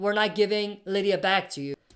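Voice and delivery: ordinary talk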